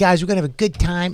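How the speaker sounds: put-on quick little Boston accent, corporate host style. A host who is bombing on stage tries to win the crowd back, Boston accent. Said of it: "It's my little Boston voice".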